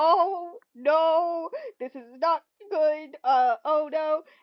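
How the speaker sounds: loud, very slow, drawn-out acted panic. Retelling a scene where a woman finds someone in her closet: imitating someone freaking out. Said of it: "she's like freaking out".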